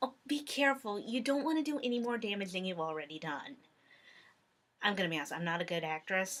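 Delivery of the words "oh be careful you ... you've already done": condescending, pitying, talking-down tone. Acting out a character talking to Derpy in an edit, mock-condescending, pitying tone. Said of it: "she sounds really condescending and like she's pitying Derpy".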